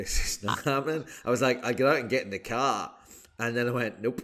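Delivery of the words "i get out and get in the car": put-on Boston accent, poorly done. Recalling trying an accent for one sentence before giving up: bad boston accent. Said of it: "the best Boston accent you've ever heard".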